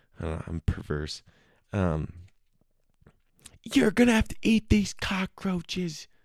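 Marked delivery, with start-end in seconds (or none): 3.7-6.1 very high-pitched, yelling, hollering game-show host voice. Imitating Fear Factor's Joe Rogan announcing a challenge: yelling Joe Rogan impression. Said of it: "he's yelling all the time".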